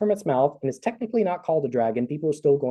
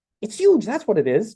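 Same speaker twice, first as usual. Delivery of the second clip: slightly hysterical, pitched up, edge of hysteria; 7 semitones higher, 3 dB louder than usual. Narrator reads Denna's reply to the narrator, with a tinge of hysteria. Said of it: "with a tinge of hysteria in her voice".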